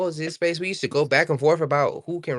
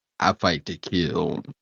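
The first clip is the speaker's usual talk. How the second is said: very low, put-on, faked bass voice; 11 semitones lower than usual. Among friends, testing whether the voice can pass as deeper: put-on deeper voice. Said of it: "Let me see if I can make my voice deeper".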